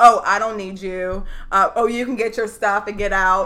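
put-on sassy attitude. Retelling what she said to her husband in an argument, retelling sassy attitude. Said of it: "like all sassy with attitude".

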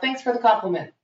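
ordinary delivery

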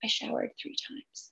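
near-whispered, very quiet, hushed voice. Retelling her husband's answer when she complained of the smell, a quiet husband impression. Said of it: "He's very quiet. It's a terrible impression".

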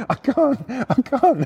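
high, very slow, drawn-out giggling protest. Retelling how a friend answered while he couldn't stop laughing: imitating someone laughing while talking.

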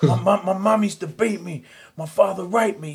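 very high, loud yelling with stammering and stumbling. Retelling what men in a martial arts class answer: imitating men yelling. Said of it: "they're yelling at him".

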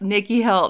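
ordinary talk

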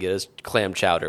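ordinary delivery

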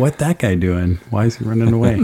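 ordinary talk

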